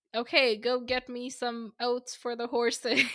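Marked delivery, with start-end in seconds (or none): none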